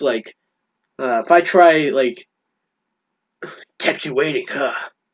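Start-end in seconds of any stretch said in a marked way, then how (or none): 3.8-4.7 hushed, low-key video-game hero voice. Wondering how an actor will sound as Snake, the speaker tries the Snake voice. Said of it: "doing the Snake voice".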